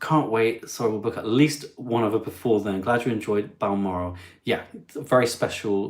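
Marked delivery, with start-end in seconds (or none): none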